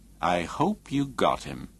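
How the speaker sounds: slow, unhurried, deliberate, drawn-out words. Reading Jensen's remark to Ingham in a novel, in a slow voice. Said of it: "Jensen said in a slow voice".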